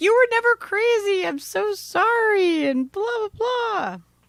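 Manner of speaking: high, loud, crying, tear-filled voice. Retelling an ex-husband coming over crying: imitating someone crying.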